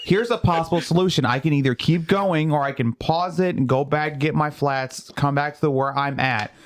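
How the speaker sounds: ordinary delivery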